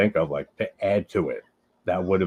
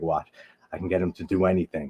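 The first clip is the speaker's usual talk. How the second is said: whispered words. Retelling how Sam Raimi whispered to his DP: imitating Sam Raimi whispering. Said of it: "whisper to his, like, D P".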